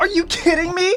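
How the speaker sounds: excited shriek, very high, shrill and very loud. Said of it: "I'm sorry for screaming".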